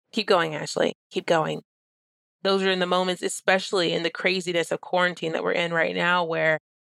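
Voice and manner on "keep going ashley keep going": imitated whisper. Retelling words said to oneself under one's breath: imitating own whisper. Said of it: "I've had to whisper underneath my breath".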